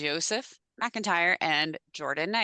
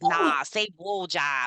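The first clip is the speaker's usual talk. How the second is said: put-on heavy Boston accent, dragged way out, very slow. Retelling what a man said, quoting him in Joe's thick Boston accent. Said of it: "his thick Boston accent on".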